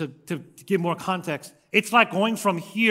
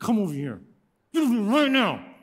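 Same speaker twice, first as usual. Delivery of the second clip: furious scolding through a bitten lip, pitched up; 5 semitones higher than usual. Retelling catching a lying son, retelling an angry command through bitten lip.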